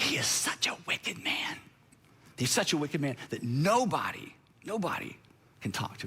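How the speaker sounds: put-on quiet whisper. Retelling a servant leaning in to speak in Abigail's ear: retelling a quiet whisper. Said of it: "She doesn't say this very loud".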